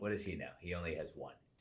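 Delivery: ordinary delivery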